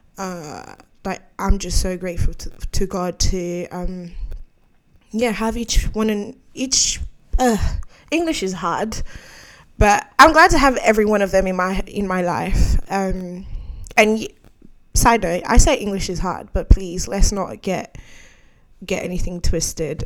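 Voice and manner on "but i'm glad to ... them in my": talking a little too fast, rushed words. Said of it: "I'm just talking a little bit too fast".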